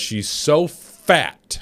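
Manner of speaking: heavy stress on fat, with punched f. Telling about a public figure needing two sets of handcuffs: heavy stress on fat. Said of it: "Do you like how I put the emphasis on the F there?".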